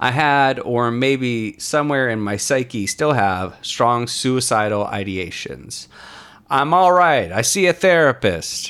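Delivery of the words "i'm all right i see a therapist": loud, emphatic, every word hit hard. Reading aloud a message written in bold caps: all-caps emphasis. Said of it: "That was in bold cap, so that's why I said it like that".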